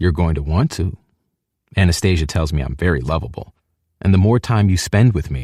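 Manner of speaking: ordinary talk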